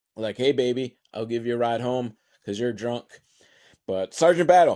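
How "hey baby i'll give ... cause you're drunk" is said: ordinary talk, nothing marked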